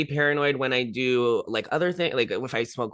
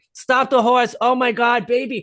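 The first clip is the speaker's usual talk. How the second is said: put-on Long Island psychic medium voice, slow and loud; 9 semitones higher, 6 dB louder than usual. Retelling a medium on a horse and carriage: imitating a Long Island medium. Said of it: "she was like".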